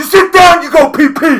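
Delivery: very loud, shrill, high-pitched holler. Telling others what Ed yells when an unprotected quarterback gets hammered, imitating Ed yelling. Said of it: "and Ed yells".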